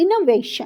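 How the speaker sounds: innovation, stress on middle syllable va. Splitting a word into parts, stress in the middle of innovation. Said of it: "इना के बाद हमारा यहाँ पर stress आएगा बीच में".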